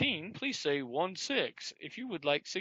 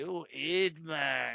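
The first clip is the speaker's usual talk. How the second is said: put-on stoner voice, much slower. Recounting trying different voices on his phone, speaker does a stoner voice. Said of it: "Maybe I'll do like a stoner one".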